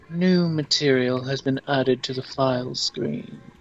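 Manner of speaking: put-on British narrator voice. Reading on-screen text aloud, in a British narrator voice. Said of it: "I know you like doing the British narrator voice".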